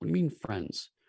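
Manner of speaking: put-on voice of an older woman. Voicing someone heard asking about the friends from inside: older feminine voice. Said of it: "an older, uh, voice, uh, feminine presenting".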